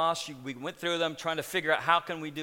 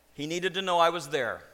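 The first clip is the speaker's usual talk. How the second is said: ordinary delivery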